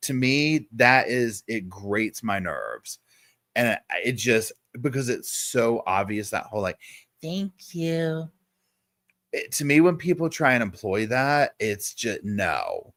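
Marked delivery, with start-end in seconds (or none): 7.2-8.3 high, sugary, put-on baby-talk voice. Complaining about people who put on a baby voice, mocking baby voice. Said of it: "that baby voice".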